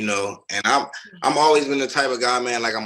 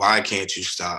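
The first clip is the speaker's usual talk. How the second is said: put-on crying, tearful pleading voice; 3 semitones lower than usual. Retelling a sister's words in the family kitchen: imitating her tearful plea. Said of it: "my sister just crying and asking me like".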